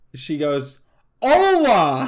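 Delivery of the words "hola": loud, drawn-out hollering yell, pitched up. Retelling a tourist greeting a waiter: imitating a tourist yelling. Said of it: "yells it at him".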